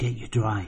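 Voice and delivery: speaking quietly. A woman speaks to a boy after closing the cottage door, said quietly. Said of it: "she said quietly".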